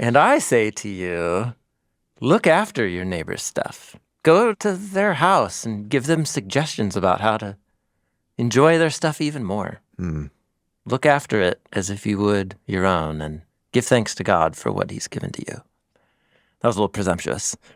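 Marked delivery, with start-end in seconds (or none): 0.0-15.5 preaching, sermon-like teaching voice. Imitating Rabbi Jesus rewording a commandment: imitating Rabbi Jesus. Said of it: "I'm imitating Rabbi Jesus".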